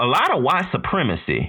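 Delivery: put-on, high, swooping Southern US accent.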